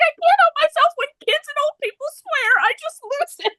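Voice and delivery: very high voice, laughing through the words.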